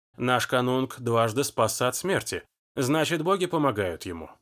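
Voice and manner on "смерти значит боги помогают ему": plain reading voice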